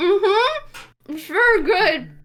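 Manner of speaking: words spoken through a mouthful of food, high pitch. Speaker's character answers a warning about bones, talking while chewing. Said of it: "as I'm chewing and trying to get around them".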